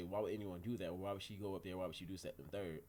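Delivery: plain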